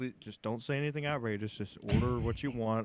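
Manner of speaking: hushed half-whisper, very close and intimate. Retelling words said into someone's ear at a restaurant: retelling a half-whisper. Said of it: "I'm whispering into his ear".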